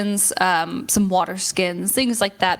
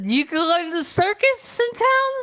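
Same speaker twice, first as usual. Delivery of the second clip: very high, slow, tipsy little dwarf character voice; 12 semitones higher than usual. Voicing a drunken dwarf who hands a player his beer glass: drunken dwarf voice. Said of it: "a drunken dwarf that passes by".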